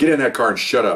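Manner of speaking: normal talking voice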